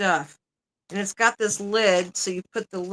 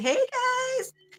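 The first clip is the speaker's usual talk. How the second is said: very high, excited, cheering voice. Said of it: "like, all excited".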